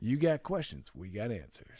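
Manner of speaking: small-town local commercial announcer voice. Repeating the slogan like a local commercial: local commercial announcer voice. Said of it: "It sounded like a local commercial".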